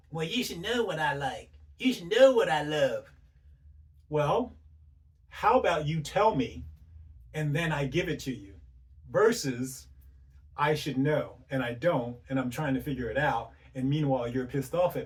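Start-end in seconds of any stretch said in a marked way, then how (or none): 0.2-3.1 snooty, stuck-up, snotty put-on woman's voice. Speaker imitates women he runs into, in a put-on snotty woman voice. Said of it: "That's my snotty woman voice".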